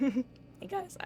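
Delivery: breaking voice, cracking in the middle of a word. Greeting the group on returning to the game, voice cracking. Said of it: "oop, voice crack".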